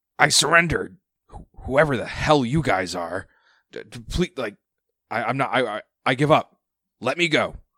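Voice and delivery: strangled voice. A game master voices an enemy character to the players, in a strangled voice. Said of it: "He is going to say in a strangled voice".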